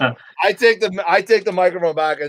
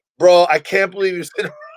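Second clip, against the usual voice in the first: ordinary talk, nothing marked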